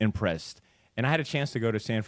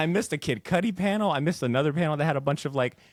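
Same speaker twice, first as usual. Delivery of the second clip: usual speaking voice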